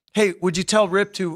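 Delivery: ordinary talk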